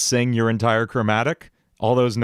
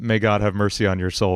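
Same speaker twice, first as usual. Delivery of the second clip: plain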